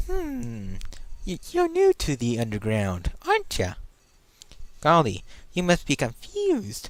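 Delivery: swooping, slow, drawn-out, cheery voice. Playing the game and trying voice acting, the player voices the flower: Flowey voice. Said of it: "I'm gonna try voice acting".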